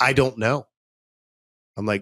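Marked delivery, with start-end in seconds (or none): 0.0-0.7 blunt, curt, rude tone. Retelling what a rude office worker answered: imitating a rude reply. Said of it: "She's super rude".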